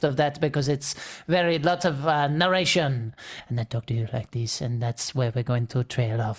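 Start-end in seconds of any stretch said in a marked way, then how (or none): 3.5-6.4 close-mic French-accented half-whisper. Describing the narration style of a text-based RPG, French-accented half-whisper. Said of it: "the French whisperer now".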